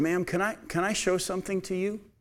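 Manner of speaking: calm, quiet, slightly high voice. Retelling what an older lady at the register said to a mother, calmly and quietly. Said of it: "calmly and quietly said".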